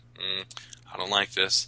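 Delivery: ordinary talk, nothing marked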